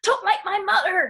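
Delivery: put-on high, loud, cross angry-child voice. Quoting the speaker's son, who gets so angry and stamps his foot: imitating an angry little boy. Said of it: "He gets so angry, stamps his little foot".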